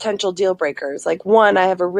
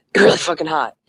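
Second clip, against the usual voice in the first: put-on muttering under breath; 3 semitones lower than usual. Retelling what a date said at the menu: imitating muttering under breath. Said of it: "he said it under his breath".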